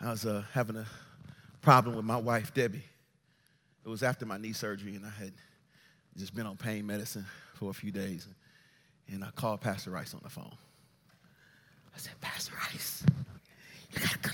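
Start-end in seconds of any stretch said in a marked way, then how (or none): 12.2-14.3 quieter whisper. Retelling a phone call to a pastor: imitating own past whisper. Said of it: "Why are you whispering?".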